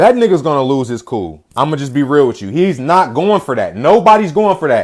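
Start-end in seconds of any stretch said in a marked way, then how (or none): none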